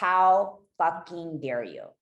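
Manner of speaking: loud, play-acted belligerent, hurt, enraged scream of fury. Recounting screaming at God, retelling a rage scream. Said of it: "I just screamed bloody murder at God".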